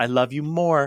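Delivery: sugary, sticky-sweet tone. Retelling a bedtime goodnight, imitating Hannah's sticky-sweet voice. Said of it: "sticky sweet back and forth".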